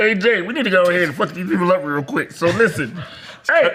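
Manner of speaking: monster-like creature voice. Showing what the speaker's own symbiote will sound like, in a symbiote creature voice. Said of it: "I know what my symbiote is gonna sound like".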